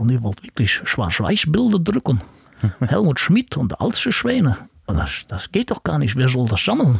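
put-on German spoken with a Dutch accent. Recounting a visitor who came to Hamburg to listen, imitating Frank Zomadeik's Dutch accent. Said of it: "also mit so einem holländischen Akzent".

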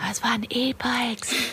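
very quiet whisper. Admitting something everyone laughs at them for, whispered very quietly. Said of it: "ich flüstere das ganz leise".

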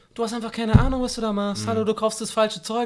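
mock condescending, know-nothing tone. Speaker describes a kind of tone and acts it out: mock-condescending tone. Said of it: "sondern im Sinne von so".

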